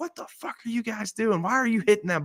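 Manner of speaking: very high-pitched, swooping, shouted outburst. Retelling getting hit by a ball while a friend yells: imitating a friend yelling. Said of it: "my friend's just yelling".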